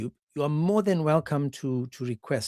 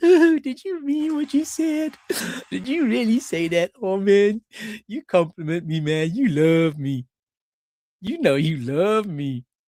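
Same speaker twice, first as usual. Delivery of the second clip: mock flattered talking through bursts of giggles; 5 semitones higher, 6 dB louder than usual. Acting out an imagined woman's reply to a pickup line: acting out giggling while talking. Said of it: "And she'll be like giggling".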